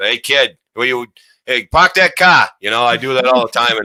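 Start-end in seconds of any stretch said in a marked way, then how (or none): 0.0-2.5 put-on Boston accent. Telling how he pretends to be from Boston, put-on Boston accent. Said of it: "I pretend I'm from Boston".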